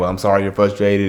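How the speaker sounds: ordinary talk, nothing marked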